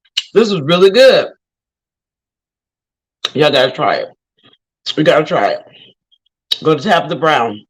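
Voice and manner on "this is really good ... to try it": talking while eating, mouth full. Tasting the dish just made live, talking with mouth full. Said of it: "I got some in my mouth".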